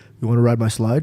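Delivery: deep voice, pitched way down low. Retelling Tony Robbins offering a ride on his slide: imitating Tony Robbins's deep voice. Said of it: "with his deep voice".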